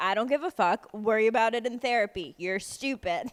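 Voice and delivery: put-on flat-out blunt, old-school dad voice. Imitating a friend's blunt advice: imitating Des as blunt eighties dad. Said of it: "he's literally like an eighties dad".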